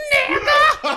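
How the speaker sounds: put-on, very high, loud, exasperated holler. Recounting to a friend how a woman shouted at him during a strange silent exchange, acting out her shouting. Retelling a yell. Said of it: "She's yelling it at me".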